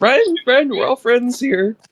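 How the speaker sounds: strained, very high voice. Retelling how you answered a man's friend-or-foe challenge: strained, up an octave. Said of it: "my voice would take on a certain strain and go up an octave".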